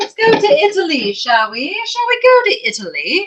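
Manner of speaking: sudden English accent. Speaker presenting artworks suggests moving on to Italy, English accent. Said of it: "I don't know why I said that with an English accent".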